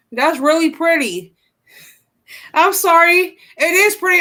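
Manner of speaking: giggling, talking through laughter. Apologizing to another speaker while unable to stop: laughing while talking. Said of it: "I just can't stop laughing".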